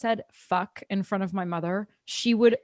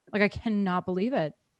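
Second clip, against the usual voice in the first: ordinary talk, nothing marked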